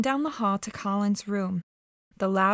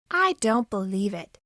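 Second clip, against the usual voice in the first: small, hard-edged voice. Mary answers a boy who says he is going to die, in a hard little voice. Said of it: "said Mary in a hard little voice".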